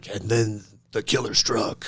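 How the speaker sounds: low, hushed podcast narrator voiceover. Mimicking a crime podcast narrator, in a podcast voiceover voice. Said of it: "always like a voiceover where it's like".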